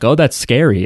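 ordinary talk, nothing marked

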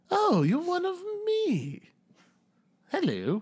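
very high, slow, swooping, fancy posh voice. Voicing a halfling who hops off a stump to greet a stranger, in a fancy voice. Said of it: "kind of like fancy".

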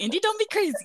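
put-on Canadian accent.

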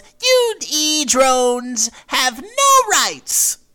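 very high, squeaky, loud cartoon bear voice. A streamer shows off the voice they use on streams: Monokuma voice. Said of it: "that is also my Monokuma".

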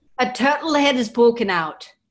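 put-on loud, high, belted Scottish accent. Speakers trying Scottish accents, one quotes a movie line: Austin Powers Scottish accent. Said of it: "Always the Austin Powers".

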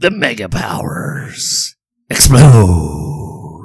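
strange, very slow voice, each word drawn out, swooping wildly. Answering which WrestleMania five tagline it is: bad Vince McMahon impression. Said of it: "I do a bad Vince McMahon impression".

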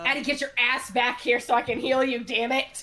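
loud, high yelling voice. Calling a wandering party member back to be healed: yelling. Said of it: "Don't yell in the woods".

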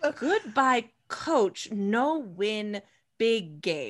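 mock baby-talk voice. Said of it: "Like baby talk?".

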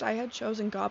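normal talking voice

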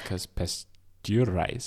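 slow, drawn-out "pasteurize" in Russian accent.

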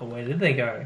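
ordinary talk

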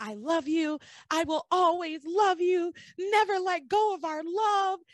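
put-on, very high, loud yelling. Retelling a scene where a character yells through a locked door: imitating someone yelling through a door. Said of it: "Miguel is yelling at Charity through the door".

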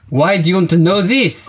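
put-on French accent. Arguing with another driver over a stolen number plate, in a put-on French accent. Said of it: "then I'll go French".

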